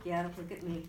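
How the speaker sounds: ordinary talk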